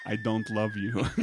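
put-on vampire accent. Acting out a man on a phone call, in a vampire accent. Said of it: "I'm doing a vampire accent".

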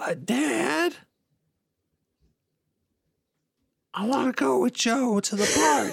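airy, breathy, very high voice. Trying out a character voice line, in a more breathy voice. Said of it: "Let me see if I can do a more breathy voice".

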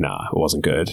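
dead serious tone. Retelling a reply to a dad at the train: imitating own dead serious tone. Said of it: "dead serious".

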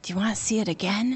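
close, quiet, soft, hushed half-whisper. Retelling a brother's question as the movie credits roll: imitating a half-whisper. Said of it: "my brother leans over and whispers".

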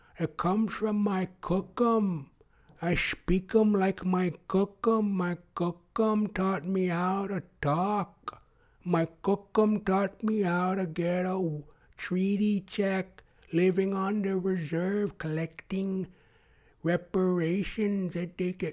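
mocking, put-on very slow talking voice. Retelling how people used to talk mockingly, imitating very slow talking. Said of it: "They're very slow talking".

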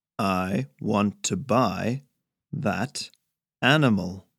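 slow, plodding, halting, each word overemphasized. Narrator reading a man speaking to Harry, slow, overemphasizing every word. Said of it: "speak slowly, overemphasizing every word".

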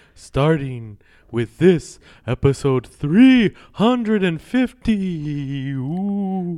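put-on vampire voice. Welcoming listeners to the Halloween episode in a Dracula voice. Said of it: "the best Dracula I've ever heard".

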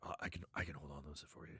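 put-on low creepy voice. Quoting Barkus offering to hold the panties: Barkus's low voice. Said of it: "his voice gets real low".

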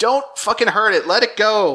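high-pitched, urgent shouting. Retelling a scene from a show: imitating Justin yelling. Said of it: "'cause Justin's yelling".

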